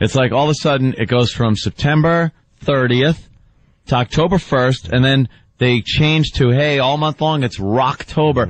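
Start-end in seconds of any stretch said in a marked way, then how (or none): none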